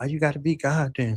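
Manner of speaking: put-on mocking tone. Speaker imitates a woman who laughed and mocked them; imitating her mocking tone. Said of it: "she's mocking me like".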